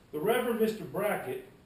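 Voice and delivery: put-on Southern accent.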